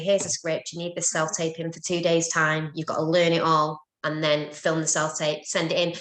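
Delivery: ordinary delivery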